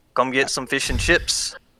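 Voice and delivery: terrible mock Scottish accent that sounds Australian. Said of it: "sounds terrible".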